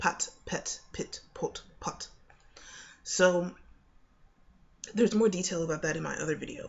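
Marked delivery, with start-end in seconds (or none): 0.0-2.1 British English pronunciation. Demonstrating vowel contrasts in a word list for a video: british accent. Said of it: "in a British accent".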